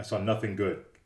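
plain

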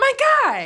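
put-on, very high, gushing, excited, enthusiastic cry. Imitating how she refers to her action figures: imitating her enthusiastic exclamation. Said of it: "she only ever says it that way with that much enthusiasm".

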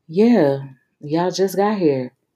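smug, self-satisfied, self-pleased tone. Narrator reads a character echoing a friend at a club, smug. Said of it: "Kingston repeated smugly".

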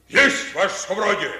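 speaking too loud. A soldier, told by his superior to speak quieter, answers speaking too loud. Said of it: "еще тише".

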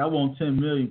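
ordinary delivery

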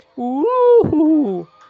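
exclaimed in head-register voice. Showing an excited exclamation, like being given a puppy, in head voice. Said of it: "Esa es voz de cabeza".

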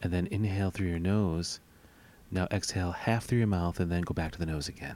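mock soothing ASMR voice. Two speakers jokingly guide the audience through breathing: mock soothing ASMR voice. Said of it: "Do we put you to sleep?".

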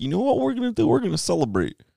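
very high, goofy voice swooping around. Acting out a historical figure's words after a battle, in a Barney Rubble-like voice. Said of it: "sounds like Barney Rubble".

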